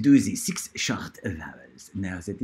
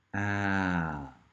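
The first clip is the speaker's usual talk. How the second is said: the word ah, slow and drawn out long; 4 dB quieter than usual. Teaching the short a vowel sound, slow, drawn-out 'ah'. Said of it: "I'm going to do it really slowly".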